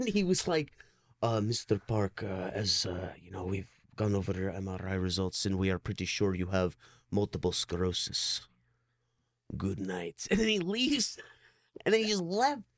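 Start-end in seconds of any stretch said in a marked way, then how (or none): 1.4-10.3 fake heavy Russian accent. Retelling how a doctor delivered a diagnosis, acting out his voice: imitating russian accent. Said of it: "it was like Dracula just walks into my room".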